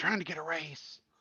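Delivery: hushed, whispered aside. Playing a character who whispers an aside to Dimitri: whispering in character. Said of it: "I kinda whisper to Dimitri".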